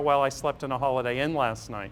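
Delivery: normal talking voice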